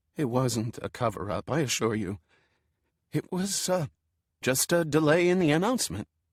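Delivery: feeble, weak, trembling shaky voice. Narrator reads a reply that finally comes over the cell phone, weak and shaky voice. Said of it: "a very weak and shaky voice".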